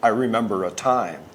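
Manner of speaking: ordinary talk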